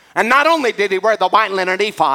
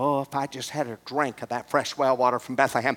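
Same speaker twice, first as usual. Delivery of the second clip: put-on mutter, much quieter, lower; 7 semitones lower, 10 dB quieter than usual. Retelling a Bible story, the speaker voices King David muttering under his breath. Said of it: "muttered under his breath".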